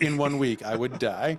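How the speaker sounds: usual speaking voice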